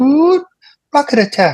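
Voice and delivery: put-on pleasant British lady voice. Describing the rocket attack warning played at training, in a pleasant British lady voice. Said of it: "It's this British lady's voice".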